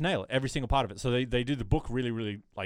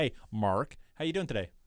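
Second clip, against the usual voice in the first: very strong, exaggerated Canadian accent. Greeting someone by name so people understand, in exaggerated Canadian accent. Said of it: "I have to, like, super Canadian his name up".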